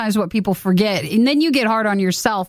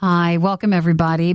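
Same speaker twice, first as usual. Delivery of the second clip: calm, soothing host voice, much lower; 4 semitones lower than usual. Opening a mock advice show as its host, welcoming everybody in a soothing host voice. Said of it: "May my soothing voice make you feel comfortable".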